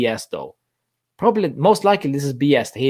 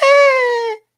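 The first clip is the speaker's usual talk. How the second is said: put-on very high, loud, drawn-out childish voice; 5 dB louder than usual. Acting out a scared defender answering a rival: very childish voice for Rugani. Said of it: "That was a very childish, uh, voice for Rugani".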